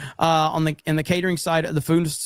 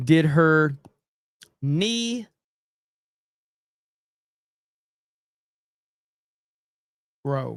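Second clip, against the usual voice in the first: each word stretched very slowly, drawn-out. Reading out a listener's message, speaker says it very slowly. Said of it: "I said it very slowly".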